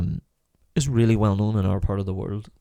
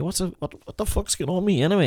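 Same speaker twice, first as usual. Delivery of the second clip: Donegal farmer voice, pitched higher; 9 semitones higher than usual. Retelling what a Donegal farmer said in a chapel: imitating a Donegal farmer's way of talking. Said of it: "this is the way he talked".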